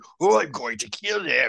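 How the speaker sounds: put-on gruff cartoon voice. Speaker quoting a male movie character's line, gruff cartoon voice. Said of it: "he's got the gruff cartoon voice".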